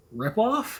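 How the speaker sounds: high, concerned tone. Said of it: "with a concerned tone say".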